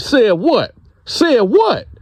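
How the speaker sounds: acted, very high, shrill, swooping, demanding yell. Retelling how a guy yelled at a girl to repeat what she said: retelling a yell. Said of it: "don't be yelling and screaming".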